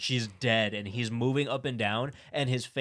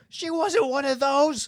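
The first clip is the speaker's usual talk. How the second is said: put-on screaming, higher and louder; 7 dB louder than usual. Retelling a movie scene where a man runs home: imitating Dwayne screaming. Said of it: "he's screaming".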